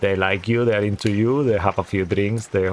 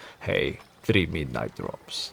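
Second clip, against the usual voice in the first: handsome, low, rough, sexy cowboyish voice; 5 semitones lower, 7 dB quieter than usual. Retelling how a guy ordered drinks from the barman, in a handsome, sexy voice. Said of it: "very handsome, sexy voice".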